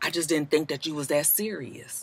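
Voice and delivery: soft, very hushed, very quiet voice. Retelling how someone speaks when in trouble: imitating a soft voice. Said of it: "they come with the soft voice like".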